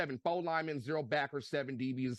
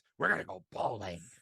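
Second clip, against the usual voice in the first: gravelly, rough, gruff big-boss announcing voice. Mocking Craig's plan to go bowling, the speaker uses a Vince McMahon voice. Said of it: "Let me use my Vince McMahon voice".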